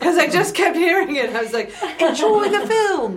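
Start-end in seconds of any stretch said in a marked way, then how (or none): 2.0-3.2 put-on English accent, pitched up. Recalling being asked to say something in another accent, put-on English accent. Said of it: "I just did it in an English accent".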